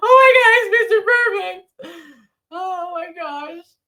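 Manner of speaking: very high, loud, wailing fake sobbing. Acting out meeting a favorite wrestler: mock crying. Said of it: "I would be crying and bawling".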